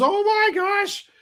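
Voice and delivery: very high-pitched startled woman's exclamation. Voicing the lady in the house as she hears the noise: startled lady. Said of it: "you hear the lady goes".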